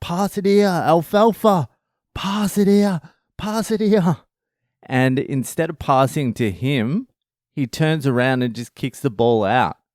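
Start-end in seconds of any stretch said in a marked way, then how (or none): 0.0-4.2 mock shrill, very high yelled call. Retelling a kid's soccer game, imitating a teammate yelling. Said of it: "yelling out".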